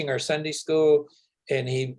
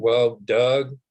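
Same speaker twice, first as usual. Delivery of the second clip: put-on very deep voice, much lower; 3 semitones lower, 4 dB louder than usual. Retelling a man's answer to a question about discrimination, imitating a very deep voice. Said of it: "I always have to do this in a very deep voice".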